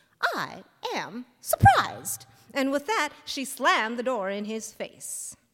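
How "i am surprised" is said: sugary, sweetly pleasant, sing-song voice. Narrator reading a story, a woman answering a man backing toward the door, sweetly. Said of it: "said Dorothy sweetly".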